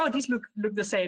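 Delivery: ordinary talk, nothing marked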